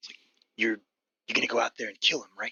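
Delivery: hushed whisper. Voicing a man who beckons the listener close over the fire, whispering. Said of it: "He whispers to you like over the fire".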